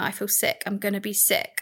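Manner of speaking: plain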